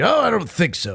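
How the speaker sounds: put-on affected, mannered voice. Showing the affected voice used when arguing with another speaker: affected voice. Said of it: "I start doing the affectation to my voice".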